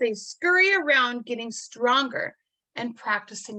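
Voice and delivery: ordinary delivery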